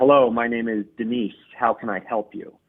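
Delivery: ordinary talk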